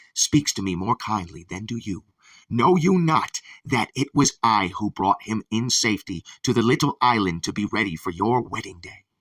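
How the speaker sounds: plain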